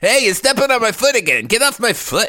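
put-on wife voice. Playing the wife in a party scene with a partner: playing Bill's wife. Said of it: "You do the wife then".

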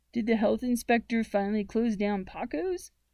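plain

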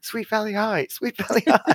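shrill, high, loud shouted yell. Retelling yelling a book title while driving: imitating own yelling. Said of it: "driving and I'm yelling".

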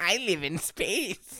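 put-on cartoon goblin voice. Answering a friend's 'the goblin says' prompt, in a goblin voice. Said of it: "The goblin says".

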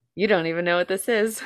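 ordinary delivery

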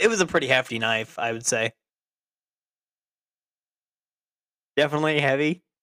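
laughter breaking into the spoken words. Describing a knife shown in a screenshot, laughing while talking. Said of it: "I'm sorry, I'm laughing".

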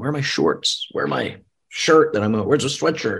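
mild exasperation, frustrated, scattered tone. Retelling fumbling around the room for clothes: imitating own frustrated tone. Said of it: "Just even the tone of your voice right there".

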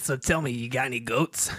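put-on New York woman's accent. Asked by another speaker to do it, answering in New York lady voice. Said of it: "Do your New York lady".

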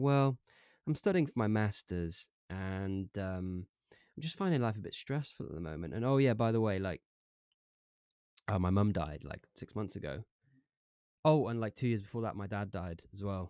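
normal talking voice

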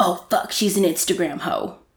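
mock-disgusted tone. Recapping an episode, quoting what one person said about another: imitating disgust. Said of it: "Damon says with disgust".

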